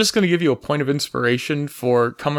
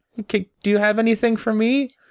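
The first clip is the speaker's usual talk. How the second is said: put-on little girl voice, higher pitch; 7 semitones higher than usual. Voicing a little girl asking an elf for a gift: playing a little girl. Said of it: "A good little girl like you".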